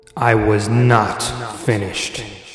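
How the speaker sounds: understated, slow, sinister menace. Narrator voices a hawk king stopping a seized prisoner from leaving, soft and sinister. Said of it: "Fiyakros spoke softly, yet with a sinister tone".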